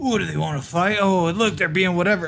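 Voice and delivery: put-on drunk country-boy voice. Imitating how their dad talks when drunk, doing drunk redneck talk. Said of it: "heard my dad get drunk and be like".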